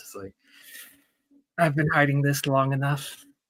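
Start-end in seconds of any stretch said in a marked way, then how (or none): 1.6-3.2 quietly muttered under the breath. Roleplaying a character glancing toward another before removing her glove: muttered under breath. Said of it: "is like under her breath".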